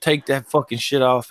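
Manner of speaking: ordinary talk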